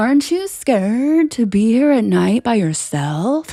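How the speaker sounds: very loud, high, unhinged, batshit-crazy voice. Retelling calling after a man walking away: retelling acting crazy. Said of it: "acting like I was batshit crazy".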